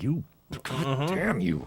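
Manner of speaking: mock under-the-breath muttering. Retelling a customer picking an inside wall for an outlet: imitating muttering under breath. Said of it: "under my breath".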